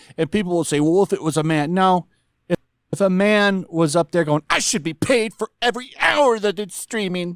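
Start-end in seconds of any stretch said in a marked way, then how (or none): 4.5-7.4 tearful, furious, crying whine. Speaker imagines a man making the same complaint, in a mock crying, angry tone. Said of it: "like in a crying, angry tone".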